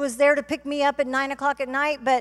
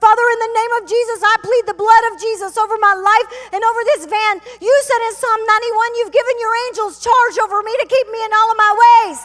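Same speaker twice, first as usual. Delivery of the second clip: screaming at top of voice, very loud and high; 9 semitones higher, 9 dB louder than usual. Recounting pleading the blood in a van among four men, retelling a scream at full voice. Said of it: "I began to scream at the top of my voice".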